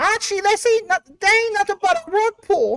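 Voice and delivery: acted woman's voice, very high. Asked what Edith would say, doing an Edith Bunker impression. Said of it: "I could do one female voice".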